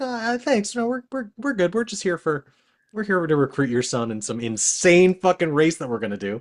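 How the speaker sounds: sweet, high, polite tone.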